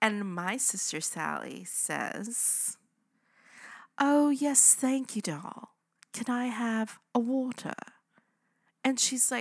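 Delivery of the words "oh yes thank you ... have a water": put-on fancy-sounding posh accent, pitched up. Retelling how the sister answered the server: put-on fancy accent. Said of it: "I love it when people do accents with me".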